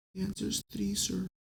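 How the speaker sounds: barely audible, high, timid, shy mumble. Retelling class, a shy student answers the teacher who picked on him; imitating a shy, quiet student. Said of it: "Fucking speak up".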